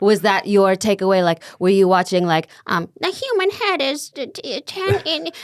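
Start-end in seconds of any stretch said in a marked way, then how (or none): 3.0-5.3 put-on very high kid voice dragging every word slowly. Imitating a child actor's line from Jerry Maguire. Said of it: "That's actually a good impersonation".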